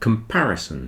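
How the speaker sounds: comparison with stress on the second syllable, par. Explaining word stress with syllable sizes, stress on par in comparison. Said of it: "the second syllable is stressed".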